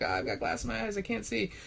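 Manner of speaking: very high, swooping, ragged, frantic, panicked screaming. Describing a scene, the speaker voices the older detective's cry: acting out a scream. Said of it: "he starts screaming".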